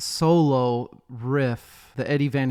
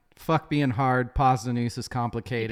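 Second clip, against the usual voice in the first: usual speaking voice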